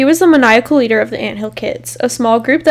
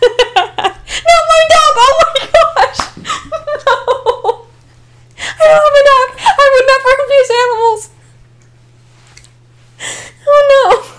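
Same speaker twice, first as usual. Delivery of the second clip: crying with laughter while talking, higher; 4 dB louder than usual. Denying something to another speaker: laughing hard while talking. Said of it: "I'm crying now".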